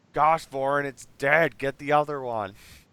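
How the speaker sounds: lightly said. Voicing a player character after an attack: yelling in character. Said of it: "but then I'll yell".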